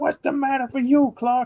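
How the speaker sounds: put-on very high-pitched old-man voice. Quoting Uncle Lewis from Christmas Vacation: Uncle Lewis impression. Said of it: "He's like".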